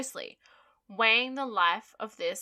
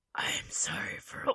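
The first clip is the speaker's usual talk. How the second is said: low gravelly superhero voice, much lower; 6 dB quieter than usual. Saying sorry after a joke, sounding like Batman. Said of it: "Why do I sound like fucking Batman?".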